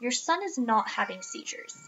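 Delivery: very snarky, snide, dismissive tone. A parent retells what the doctor said about their son, imitating a snarky remark. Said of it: "very snarkily".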